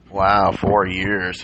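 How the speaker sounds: said sarcastically. Responding to a remark in a group conversation, sarcastic. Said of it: "That was sarcasm".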